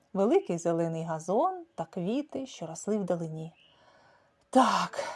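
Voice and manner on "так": barely breathing, hardly able to breathe. A character answers a companion's remark, barely breathing. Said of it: "ледь дихаючи".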